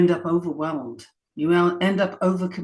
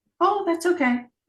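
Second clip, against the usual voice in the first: very high, placating, nothing-to-see-here tone; 11 semitones higher than usual. Speaker demonstrating how women placate to avoid conflict: high placating voice. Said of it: "See what I did just then?".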